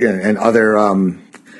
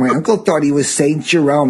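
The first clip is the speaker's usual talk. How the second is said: put-on heavy, strong New York accent; 4 semitones higher than usual. Imitating a librarian while describing her, in a New York accent. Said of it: "she has such a New York accent".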